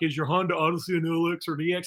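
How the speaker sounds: dim-witted store clerk voice. Mocking the questions a box-store auto parts guy asks: dumb auto parts guy voice. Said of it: "I don't know why I do that voice every time".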